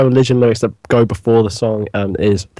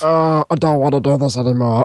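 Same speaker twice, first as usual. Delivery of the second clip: put-on mumbling online voice; 2 semitones higher than usual. Showing the others what a Jack voice sounds like: Jack voice. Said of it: "Jack voice is like".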